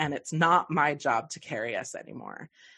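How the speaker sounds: ordinary talk, nothing marked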